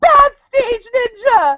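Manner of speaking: mock very high, loud crying sob and wail. Retelling what an audience member cried after the skit: imitating someone sobbing. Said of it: "they're sobbing".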